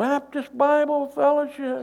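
mock yelling. Telling a joke, acting out the man above answering: imitating someone yelling down. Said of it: "the guy yells down".

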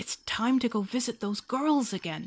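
puffing out words. Narrator reads Wolf at Rabbit's door early in the morning, puffing. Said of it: "he puffed".

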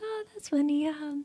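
put-on very high-pitched, soft, quiet little laugh. Retelling watching a funny movie: imitating own quiet laughing. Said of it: "I laugh kinda quietly".

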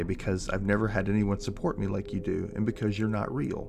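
normal talking voice

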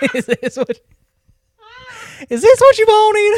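very high, loud, put-on Southern accent. Asked for their best southern accent, answering in a southern accent. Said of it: "Give me your best southern accent".

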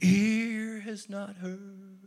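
eerie, spooky put-on voice, "ear" drawn out. Speaker imitating people who say God's things can't be understood: mocking a weird, creepy voice. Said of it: "They do their weird, creepy voice like that".

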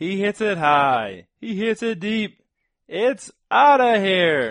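very loud, very high, belted announcer call. Asked to hear the announcer impression, doing a Kuiper home-run call impression. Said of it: "Let me hear yours".

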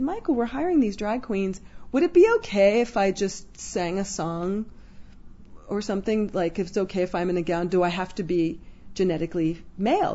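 normal talking voice

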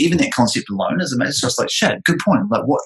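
plain

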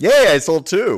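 shrill, booming, drawn-out, very loud, high excited yell. Celebrating a sale in a mock pitch game: yelling excitedly. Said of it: "don't yell".

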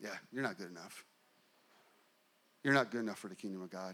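low, fast taunting voice. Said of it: "the enemy is right there going".

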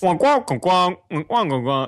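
high, loud wah-wah adult voice. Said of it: "how parents are portrayed, or adults".

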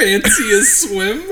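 put-on very high, loud British accent. Retelling a woman's pool invitation, imitating her British accent. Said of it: "she did have a British accent".

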